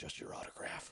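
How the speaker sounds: hushed whisper, breath only, barely voiced. Retelling an aside to his wife at dinner: retelling a whisper. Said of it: "I whispered to my wife".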